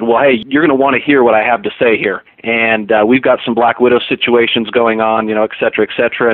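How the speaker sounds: ordinary talk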